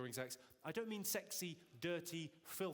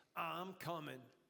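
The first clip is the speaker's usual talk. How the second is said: put-on seventies New York voice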